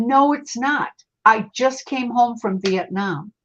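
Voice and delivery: play-acted stubborn, firm, unbudging, insistent tone. Retelling a ghost's reply about the year: imitating someone insisting. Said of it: "he was so insistent".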